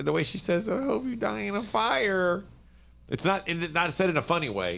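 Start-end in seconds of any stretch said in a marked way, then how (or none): 0.7-2.4 put-on eerie, creepy kid voice, slow and creaky, "fire" drawn out. Retelling what a little girl said to a man: imitating a creepy serial killer kid. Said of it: "said in a creepy, creepy serial killer kid way".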